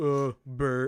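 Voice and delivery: really deep put-on voice, dropped way down. Retelling someone suggesting a name for a kid, in a really deep voice. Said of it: "It's like this really deep like voice going".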